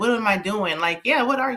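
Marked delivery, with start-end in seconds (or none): none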